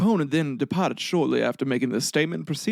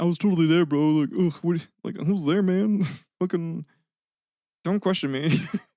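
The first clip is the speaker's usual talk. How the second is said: put-on laid-back, casual New Zealand bro accent. Retelling a man's insistence that he was there, in a New Zealand accent. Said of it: "I don't know why I'm giving like a New Zealand accent".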